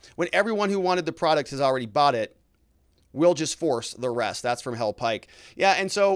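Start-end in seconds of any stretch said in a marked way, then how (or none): none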